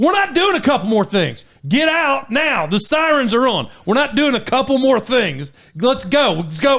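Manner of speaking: insistent, urgent, repeated delivery. Retelling ordering her to the cellar as tornado sirens go off: retelling urgent orders. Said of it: "I'm talking just like this because she said".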